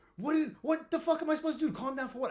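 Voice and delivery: put-on very high, shrill, enraged yelling. Retelling yelling back at a guy after being told to calm down: imitating own angry yelling. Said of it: "yelling at this, this fucking dude like crazy".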